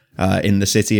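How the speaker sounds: normal talking voice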